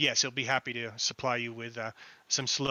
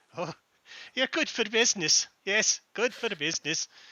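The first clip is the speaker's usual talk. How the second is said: put-on odd Eastern accent, pitched up; 8 semitones higher, 3 dB louder than usual. Game master voicing the poison seller as the players head out, strange eastern accent. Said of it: "Says in a strange Eastern accent".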